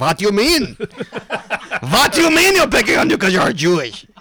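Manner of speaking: put-on heavy German accent. Retelling a first meeting, imitating Team Mac and Cheese's hard German accent. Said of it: "the hardest German accent".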